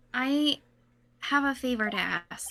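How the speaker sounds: soft half-whisper, under the breath. Asking another character for a favor: half-whispering. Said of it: "but why are we whispering?".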